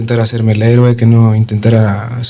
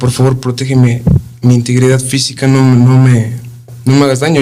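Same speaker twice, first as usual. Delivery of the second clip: ordinary delivery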